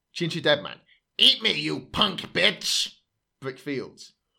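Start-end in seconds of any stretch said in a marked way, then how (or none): 1.1-2.9 slow, drawn-out, high, creaky made-up voice. Speaker reads a quote from a story, making up the voice: made-up Ginger Deadman voice. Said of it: "I'll do the voice".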